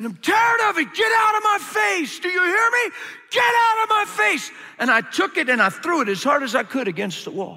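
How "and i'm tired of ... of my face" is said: play-acted, very high, mad, furious scream. Telling a story about a past outburst, retelling screaming at god. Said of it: "I was screaming at God".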